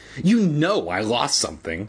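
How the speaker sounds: ordinary talk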